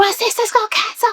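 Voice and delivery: play-acted very high, frantic, panicked screaming. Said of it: "I could just hear her screaming".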